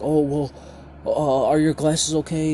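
acted, high, panicky, flustered fumbling delivery. Retelling a parent's words right after a slap: imitating someone panicking. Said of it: "she instantly started to panic and was like".

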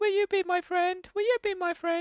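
high, cute little creature voice.

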